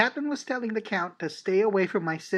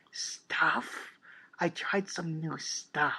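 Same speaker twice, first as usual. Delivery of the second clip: lowered, secretive, slow, hushed half-whisper; 2 semitones lower, 5 dB quieter than usual. After a suspicious glance at a companion, she continues: quieter tone. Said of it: "continued in a quieter tone of voice".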